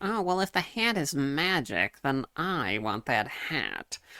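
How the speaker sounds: measured, unhurried magician voice. Retelling a cartoon scene, imitating the magician's voice. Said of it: "That is literally the voice".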